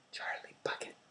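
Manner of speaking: nervous whisper. Narrator reading a boy answering last, in a small nervous whisper. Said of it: "a small nervous voice whispered".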